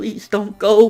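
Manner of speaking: acted, high, loud crying, tearful begging. Retelling an anime scene where Tsukiyama begs: imitating Tsukiyama begging, crying. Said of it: "begging, crying".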